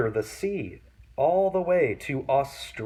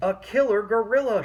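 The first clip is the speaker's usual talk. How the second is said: high, squeaky little mouse voice; 6 semitones higher than usual. Narrating a story, the mouse answers Panda in a squeaky mouse voice. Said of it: "she squeaked".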